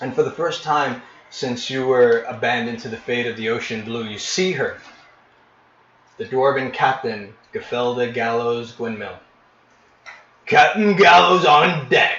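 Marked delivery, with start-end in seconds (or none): 10.5-12.2 booming bark, very loud and pitched up. As the dwarven captain appears, the Goliath announces her on deck: barking Goliath voice. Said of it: "the Goliath barks".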